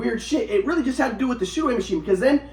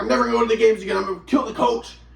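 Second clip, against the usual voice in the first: ordinary talk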